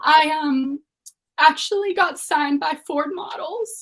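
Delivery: heartfelt emotional voice. Sharing news with everyone first that they haven't told anyone, getting so emotional. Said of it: "I'm like getting so emotional".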